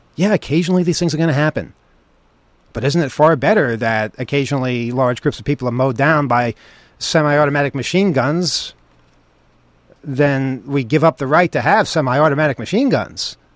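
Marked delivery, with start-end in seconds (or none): none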